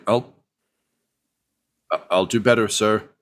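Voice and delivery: muttered character voice. Voicing Grimley, who answers while being stared down: Grimley muttering. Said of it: "He just kind of mutters like".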